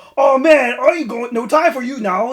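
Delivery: put-on accent slipping into English, very loud, pitched high. Mocking a voice actor whose accent breaks near the end, mimicking a slipping English accent. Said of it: "he starts talking in an English accent".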